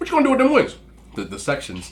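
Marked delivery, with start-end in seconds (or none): 0.0-0.8 rapid-fire, very high and loud delivery. Retelling your aunt asking your mom about the cut-off wings, imitating her fast talk. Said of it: "She talks real fast".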